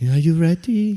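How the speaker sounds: mimicked calming tone. Retelling being measured before a punch, the man asks, imitating a calm, passive voice. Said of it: "with his so passive and calming voice".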